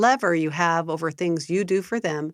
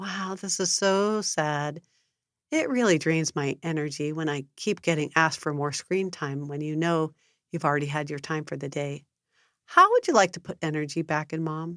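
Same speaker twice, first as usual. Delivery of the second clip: gentle, calm, sympathetic, empathetic voice; 4 dB quieter than usual. Demonstrating the Love and Logic energy drain response to a child, calm voice with empathy. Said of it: "Notice my calm voice with empathy".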